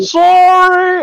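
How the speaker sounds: shrill, very loud, high, stretched-out shout. Voicing Grognar running past: shouting "Sorry!". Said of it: "Grognar's just gonna shout".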